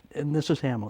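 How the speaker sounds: ordinary delivery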